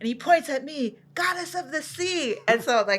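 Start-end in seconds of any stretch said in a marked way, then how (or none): 1.1-2.4 put-on, high, called-out voice. Retelling an older man's words while getting out of the water: imitating someone screaming. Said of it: "he started screaming that at me".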